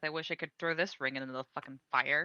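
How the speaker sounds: very low, hushed mutter under the breath. Role-play game, a player's character reacting to a ring comment, mumbled under her breath. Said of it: "Nimi just kind of mumbles under her breath".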